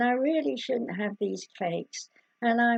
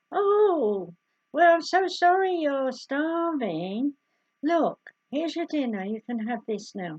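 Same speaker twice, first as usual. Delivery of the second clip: kindly firm tone, "oh" drawn out long; 4 semitones higher, 3 dB louder than usual. Speaker demonstrates how to talk to a hungry child, firm but smiling. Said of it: "say it firmly, but also say it with a smile".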